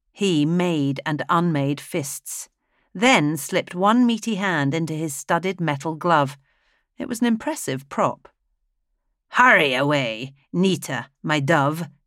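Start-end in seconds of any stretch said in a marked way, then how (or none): 9.3-11.9 scornful, mocking, slow sneering jeer. A man sneers at Nita. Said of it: "he sneered".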